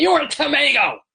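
mock very high, piercing, shouted yell.

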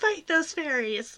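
high-pitched, loud screaming. Recalling a favorite Supernatural episode: imitating Dean screaming. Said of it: "Dean screaming at Sam".

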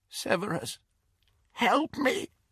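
voice cracking with terror. A captive woman turning toward the firelight cries out, in a cracked, terrified voice. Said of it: "in a cracked and terrified voice".

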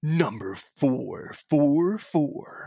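dramatic countdown announcer voice with self-made echo. Announcing number four in a list segment: countdown voice with self-made echo. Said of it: "It's my countdown voice".

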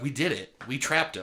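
plain

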